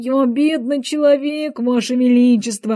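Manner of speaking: tremulous, quavering voice. The hatter answers the king, who has threatened to execute him, in a trembling voice. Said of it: "дрожащим голосом начал шляпник".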